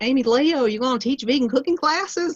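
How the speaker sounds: put-on strong Southern American accent. Retelling what a woman from a class asked: strong Southern accent. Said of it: "she had a very strong Southern accent, just like this".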